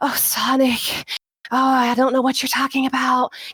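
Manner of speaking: heavy breathing audible all through the line. Showing poor breath control while voice acting, with heavy audible breathing. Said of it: "hear me breathing all over the place".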